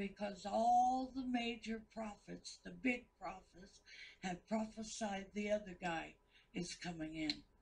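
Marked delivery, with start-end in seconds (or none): none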